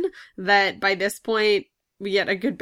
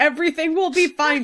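play-acted, pitched-up mock yell; 7 semitones higher, 4 dB louder than usual. Joking about calming crying kids on the show: mock yelling. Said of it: "Can you tell by how I'm yelling that?".

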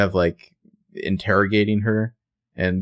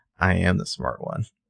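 put-on sexy, seductive voice, quieter; 3 dB quieter than usual. Speaker recapping a scene where she answers Toby, mock-sexy voice. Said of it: "in the like sexiest voice imaginable".

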